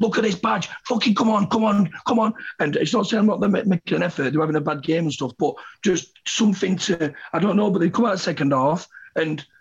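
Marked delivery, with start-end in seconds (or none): 0.0-2.3 high, drawn-out, passionate scream. A fan recalls running to the tunnel at half-time, retelling a scream. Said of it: "I'm screaming".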